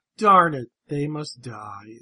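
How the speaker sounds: weary, flat, tired, zero enthusiasm. Retelling a line from the episode, imitating Galvatron with no enthusiasm. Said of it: "It's no enthusiasm".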